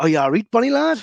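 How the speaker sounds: hearty, friendly tone. Showing how the local greeting should sound: jovial greeting. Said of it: "you gotta say it jovially".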